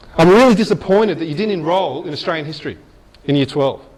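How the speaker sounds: ordinary talk, nothing marked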